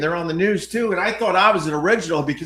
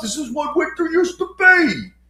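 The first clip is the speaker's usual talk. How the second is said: put-on old man voice, pitched higher; 9 semitones higher than usual. Mocking what every old guy says about winter: imitating an old guy. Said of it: "every old guy saying the same damn thing".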